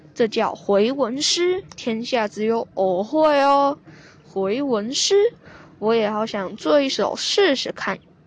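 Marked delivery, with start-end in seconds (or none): none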